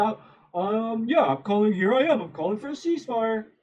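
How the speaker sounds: acted begrudging sarcastic tone, hesitant with ums. Retelling how Ethan finally gave in to his chat: imitating Ethan sarcastically. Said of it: "kinda sarcastically said".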